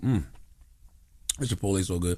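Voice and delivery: talking with mouth full. Speaker stops mid-argument to chew Chipotle: chewing, mouth full. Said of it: "let me chew my food".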